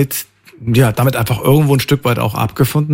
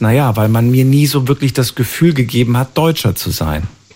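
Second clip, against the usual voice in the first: ordinary delivery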